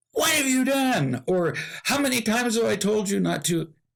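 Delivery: explosive angry outburst, pitched high. Showing how adults react when a kid misbehaves: exploding angrily. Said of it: "Do you hear my tone of voice?".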